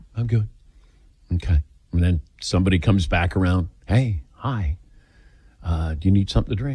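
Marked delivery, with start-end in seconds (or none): 3.9-6.8 speaking in hushed tones. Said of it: "People speak in hushed tones".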